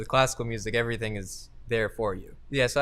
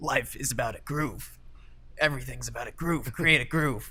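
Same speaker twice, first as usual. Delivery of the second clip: rasp-edged, raspy voice; 2 semitones higher than usual. Student quotes the music school's jazz chair's frequent advice, imitating Justin DeChocho's raspy voice. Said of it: "he always tells us in his in his raspy voice".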